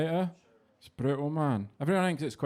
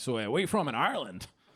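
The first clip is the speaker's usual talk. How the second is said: put-on American-sounding voice. Retelling what Americans ask on hearing the accent: imitating an American. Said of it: "Most Americans hear my accent, like".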